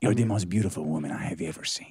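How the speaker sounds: very deep, low-pitched put-on Spanish accent. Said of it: "Do you have to do it with an accent?".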